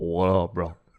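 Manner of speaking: extremely deep, low voice. Retelling how a neighbor at the pool greeted him: imitating a very deep voice. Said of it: "He's got the deepest voice in the world".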